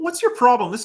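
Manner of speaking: aggressive, loud, quick snapping angry words. Showing the aggressive tone when someone asks how you are: aggressive, angry snappy tone. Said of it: "I'm being aggressive. ... my tone of voice is like quick, snappy words, and I'm angry".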